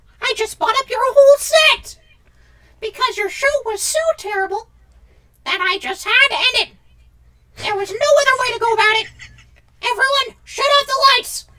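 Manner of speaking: pitched way up and loud. Playing a guest in a skit who ends the show: Mickey Mouse voice. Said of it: "I'm Mickey Mouse".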